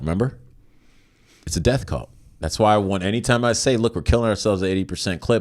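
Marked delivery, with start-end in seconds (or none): none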